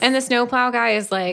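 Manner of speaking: ordinary talk, nothing marked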